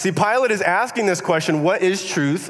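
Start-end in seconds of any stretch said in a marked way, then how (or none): 1.6-2.5 scornful, dismissive, sarcastic brushing-off tone. Retelling Pilate's question during the interrogation: imitating a sarcastic question.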